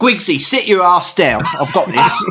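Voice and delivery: fake high Manchester accent. Acting out a bandmate telling another to sit down because he's got this: put-on manchester accent. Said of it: "That Mank accent, not too bad".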